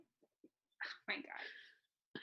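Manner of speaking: very slow, soft, exasperated whisper.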